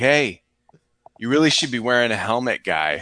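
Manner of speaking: put-on New England accent. Retelling what a guy who came by said to them, in a New England accent. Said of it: "like New England a- accent".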